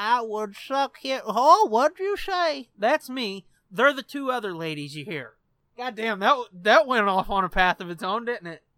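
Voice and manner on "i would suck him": put-on elderly woman voice. Retelling what the old lady said, in an old lady voice. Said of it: "The old lady is like".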